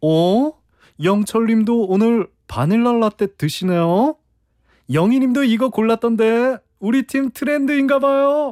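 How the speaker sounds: light, casual, high, breezy offhand tone.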